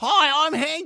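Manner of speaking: put-on booming, very high Australian kid voice, loud. Retelling a school assembly where a boy introduces himself, Hank's loud Australian voice. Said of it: "in his loud, like, Australian voice".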